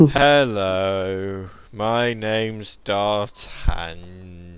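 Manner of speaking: low, flat, bored monotone host voice. Speaker shows the voice someone says he uses doing a show: bored voice. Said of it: "that bored voice would be me doing a show normally".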